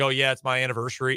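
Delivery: ordinary delivery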